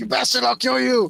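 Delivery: raw, shrill, rough, furious raging scream. Voicing a character attacked in a fight, screaming in character. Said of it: "he screams".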